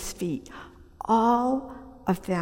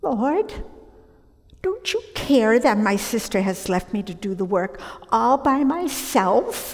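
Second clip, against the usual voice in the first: acted, loud, whiny voice full of self-pity; 3 semitones higher, 5 dB louder than usual. Acting out Martha interrupting Jesus, whiny Martha impression, self-pitying. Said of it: "saying in this whiny voice filled with self-pity".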